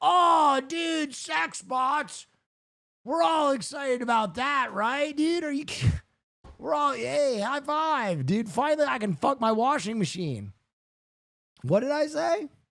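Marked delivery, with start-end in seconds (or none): 0.0-10.5 excited, eager, hyped-up dude-bro chatter. Mocking another speaker as an eager guy about sex bots: imitating an eager bro. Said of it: "You're like that guy who's like".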